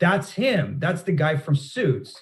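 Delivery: put-on yelling, toned down. Retelling a passenger on a plane calling out to everyone: imitating someone yelling. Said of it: "she yells over the, everybody in the plane".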